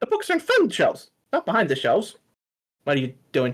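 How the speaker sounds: small, high, sing-song gnome voice. In a story, a gnome pops up behind a shop counter: little gnome voice. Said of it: "a little gnome pops up".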